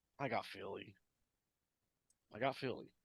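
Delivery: very quiet, hushed, shamefaced, ashamed voice. Announcing a pick against own team, said shamefully. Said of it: "Why you say it like that?".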